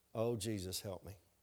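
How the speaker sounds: mock under-breath mutter. Retelling what a man said as he was about to walk out, muttered under his breath. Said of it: "Under his breath".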